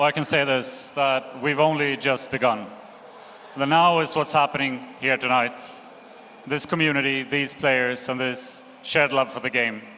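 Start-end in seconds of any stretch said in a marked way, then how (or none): none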